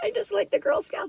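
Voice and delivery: very high, soft, catching, choked-up and teary. Talking about the Girl Scouts logo and getting teary. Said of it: "I'm going to get teary".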